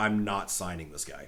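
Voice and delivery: mock angry outburst. Retelling a contract dispute, quoting the team owner: imitating someone pissed off. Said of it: "got so pissed that he's like".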